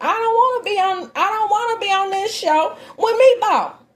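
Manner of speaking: man's voice pushed way up, high and squeaky. Quoting a man who didn't want to be on the show, mimicking his high-pitched voice. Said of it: "In his high pitched voice".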